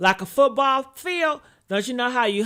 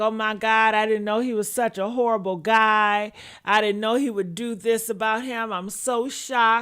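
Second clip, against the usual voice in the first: usual speaking voice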